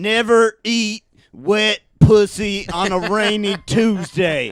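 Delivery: booming, very loud, drawn-out yell. Retelling how a guy in the crowd interrupted the joke: imitating a guy yelling out. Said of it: "this guy just yells out".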